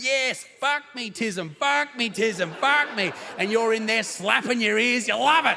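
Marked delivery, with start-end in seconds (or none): 0.0-3.1 loud screaming cries throughout. Acting out college girls in a joke: pretend screaming. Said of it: "college girls just screaming, going".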